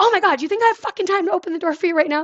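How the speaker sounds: put-on angry snap, pitched very high. Retelling how she answered her partner banging on the door during a code: retelling her own angry snap. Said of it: "instead of like calmly being like".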